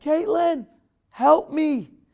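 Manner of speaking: high shouted call. Retelling calling out to the wife in the bedroom: retelling a yell for help. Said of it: "I yelled out into the".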